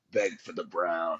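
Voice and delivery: very deep, low, gruff voice. Quoting a man's remembered line, doing it in his gruff voice. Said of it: "his like gruff voice".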